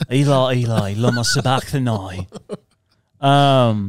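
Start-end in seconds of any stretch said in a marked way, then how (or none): 0.1-2.3 put-on British accent. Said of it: "Jesus and all these people in the Bible had British accents".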